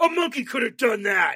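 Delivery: put-on angry yell. Retelling what a losing opponent yelled while scooping up cards: imitating an angry yell. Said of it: "he yelled".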